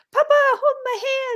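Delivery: put-on very high, cutest tiny-child voice. Retelling what a small child said to his dad: imitating a cute little kid's voice. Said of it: "in the cutest voice".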